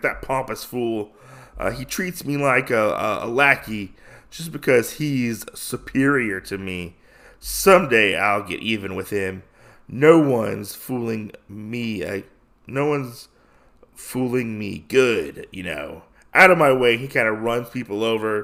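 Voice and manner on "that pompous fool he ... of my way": ordinary talk, nothing marked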